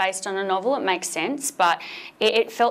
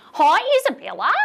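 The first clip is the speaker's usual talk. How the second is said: very high, loud put-on Australian accent; 12 semitones higher, 7 dB louder than usual. Imitating how people in the uk greeted them, attempted australian accent. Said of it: "my impersonation of a person trying to do an Australian accent".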